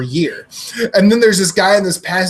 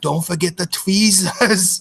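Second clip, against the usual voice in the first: put-on Swiss-accented delivery. Retelling what a guy in the back seat says, in a Swiss accent. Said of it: "I'm going to do an accent".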